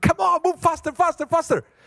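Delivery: mock very high, impatient yelling, losing it. Telling a story about a man stuck in a slow line: imitating an impatient man yelling. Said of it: "he was starting to lose it".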